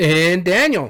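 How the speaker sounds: announcer voice with a sliding pitch. A co-host introducing the other host on the podcast, in announcer voice with a slide. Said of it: "you got into the, the announcer voice right there. You even had the slide".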